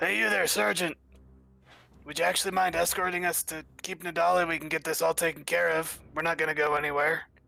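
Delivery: calling out loudly in a character voice. Calling out to a sergeant in character: yelling out in character. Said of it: "I'll yell out to the sergeant".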